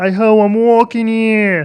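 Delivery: very high, loud, blended frog puppet voice. Showing what two voices sound like combined: Kermit the Frog mixed voice. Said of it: "So then if you combine them".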